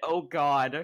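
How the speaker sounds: put-on very quiet, muttered voice. Retelling what was just heard from another player: imitating a very quiet voice. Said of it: "I just heard a very quiet".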